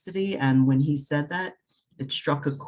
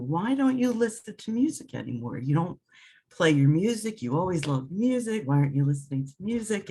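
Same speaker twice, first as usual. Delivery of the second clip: animated, swooping, motherly scolding tone; 3 semitones higher than usual. Retelling what their mother said in an angel reading, imitating her scolding. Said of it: "she chastised me".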